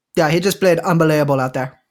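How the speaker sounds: sports interview voice, "unbelievable" mispronounced. Retelling how Rafael Nadal calls his opponent unbelievable in interviews: Rafael Nadal impression. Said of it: "but he will say it as".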